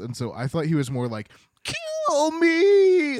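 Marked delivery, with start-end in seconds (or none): 1.6-3.2 very high, loud, squeaky, obnoxious shriek. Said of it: "this squeaky, obnoxious voice".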